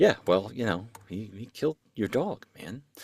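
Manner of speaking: put-on muttered words. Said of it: "under her breath".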